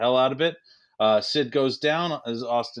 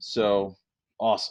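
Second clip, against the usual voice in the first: ordinary delivery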